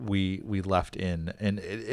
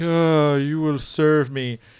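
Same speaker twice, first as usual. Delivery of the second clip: acted, bored, uncaring, aloof child voice, raised and high; 7 semitones higher, 7 dB louder than usual. Mocking the English dub of Lelouch: imitating Lelouch as aloof, uncaring kid. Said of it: "Lelouch just sounds like an aloof kid who just doesn't care".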